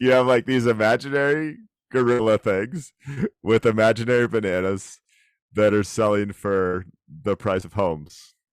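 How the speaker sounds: words broken up by laughter. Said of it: "I can't do it without laughing".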